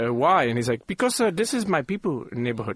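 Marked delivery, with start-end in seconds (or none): 0.8-2.8 put-on Indian accent, pitched up. Retelling what a man told him: Indian accent. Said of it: "I'm about to do this in the Indian voice".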